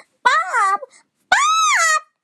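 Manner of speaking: shrill, swooping, very high-pitched scream. Retelling how everyone screamed at Bob, imitating high-pitched screaming. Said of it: "in, like, a high-pitched voice".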